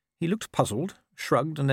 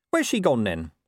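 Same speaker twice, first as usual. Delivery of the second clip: plain reading voice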